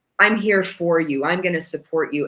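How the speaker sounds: mock, calm, reassuring voice. Retelling how the man in red offered support: imitating a calm voice. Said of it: "Very calm and like".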